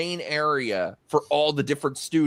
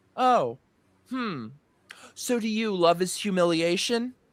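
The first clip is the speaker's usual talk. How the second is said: cool, dismissive, tossed-off delivery; 4 semitones higher than usual. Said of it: "So I'm gonna reenact it. She goes".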